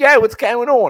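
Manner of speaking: put-on very loud, high South Philadelphia accent. Speaker recalls first meeting a friend, imitating Dana's South Philly accent. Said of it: "I started that accent because my friend".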